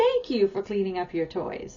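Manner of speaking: heavy emphasis on "thank you". Example line for after toys are cleaned up, with stress on thank you. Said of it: "I stress the word please and thank you".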